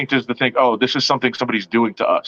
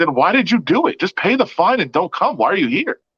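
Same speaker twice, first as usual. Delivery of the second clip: mock, sarcastic, needling, snarky tone, pitched up; 6 semitones higher than usual. Retelling what he asked someone who didn't want to talk, acting out a snarky question. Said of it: "I'm saying it in a kind of a snarky way because I, that's how I said it".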